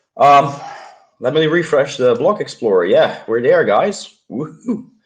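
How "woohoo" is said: weak, feeble, limp little celebratory cheer. Celebrating a milestone with the audience, hard to raise voice: weak celebratory cheer. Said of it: "that's not the best celebration of me".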